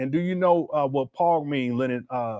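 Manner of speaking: normal talking voice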